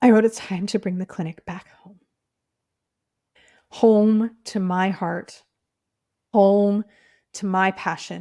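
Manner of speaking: weeping, tearful, crying through the words. Reading out their own writing, the speaker is crying while speaking. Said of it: "I don't know why I'm crying right now".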